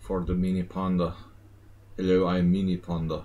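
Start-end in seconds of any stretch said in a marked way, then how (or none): 2.0-3.2 put-on Eastern European accent. Speaker voicing a mini panda introducing itself, in a put-on Eastern European accent. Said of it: "Speak with an Eastern European accent".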